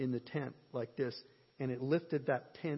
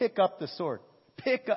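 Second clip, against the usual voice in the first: yelling, higher and louder; 6 semitones higher, 6 dB louder than usual. Retelling telling people to pick up a sword: imitating his own yelling. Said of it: "And I started yelling".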